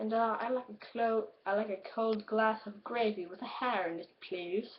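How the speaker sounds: bad, fumbling put-on British accent. Rating a movie dialogue clip, quoting Davy Jones in a bad British accent. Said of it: "I can't do a British accent".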